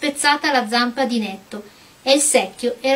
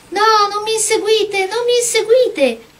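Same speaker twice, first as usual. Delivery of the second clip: tiny, very high, frightened voice; 10 semitones higher than usual. A porcelain princess cries out to Dorothy as she chases her, small frightened voice. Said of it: "Aveva una vocina così spaventata".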